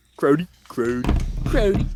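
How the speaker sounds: high, loud mock Toronto accent.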